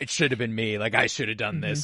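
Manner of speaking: acted-out exasperated, put-upon lamenting tone. Retelling a scene from episode six, imitating exasperated Kanan. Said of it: "his exasperated sort of".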